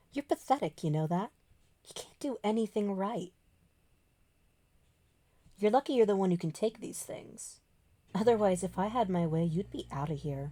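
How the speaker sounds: low hushed menace. Voicing a character leaning in nose to nose: low, quiet, dangerous voice. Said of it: "his voice lowers".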